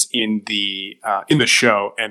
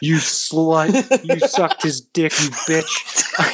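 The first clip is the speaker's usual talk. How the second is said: mock crying, slow and sobbing; 6 semitones higher than usual. Retelling a favorite scene of a man phoning his wife, imitating a man crying. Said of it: "And he's just crying".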